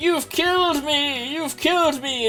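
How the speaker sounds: put-on old man voice, screaming. Retelling a cartoon scene where a character is pushed into a pit: imitating Farnsworth screaming.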